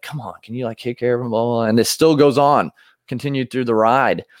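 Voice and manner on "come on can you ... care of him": put-on mutter under breath, much quieter. Retelling a man on a ride distracted by a dad's yelling kids: imitating muttering under breath. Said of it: "under his breath".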